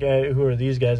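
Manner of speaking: ordinary talk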